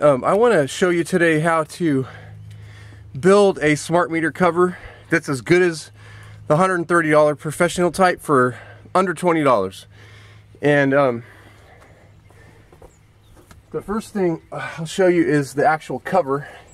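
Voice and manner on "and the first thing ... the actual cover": a little out of breath, slightly winded. Showing viewers the smart meter cover he built, a little out of breath. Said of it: "I'm a little out of breath here".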